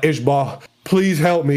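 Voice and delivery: ordinary talk, nothing marked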